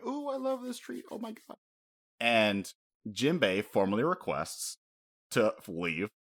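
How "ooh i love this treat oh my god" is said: put-on very high, soft, childlike voice full of glee. Retelling a calmed villain's reaction, imitating Big Mom as jovial, childlike. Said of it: "this very jovial, happy person, like a child".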